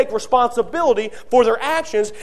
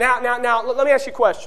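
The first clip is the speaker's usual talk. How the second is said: plain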